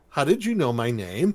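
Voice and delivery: ordinary talk, nothing marked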